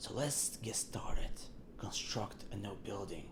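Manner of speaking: put-on mysterious voice. Starting the build, the speaker reads out the next step in a mystery voice. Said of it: "I'm doing the mystery voice".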